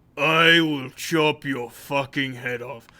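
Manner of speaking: low, deep, seething, angry, menacing dwarf voice. Voicing a dwarf threatening someone: angry dwarf voice. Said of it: "The dwarf looks pissed".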